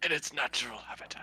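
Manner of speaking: nature documentary narrator voice. Describing a creature the group sees: David Attenborough voice. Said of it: "That sounded exactly like David Attenborough".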